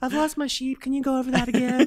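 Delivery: very high-pitched, nursery-rhyme storybook voice. Playing up the student's request to the teacher: Little Bo Peep voice. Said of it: "you sound like Lil Bo Peep".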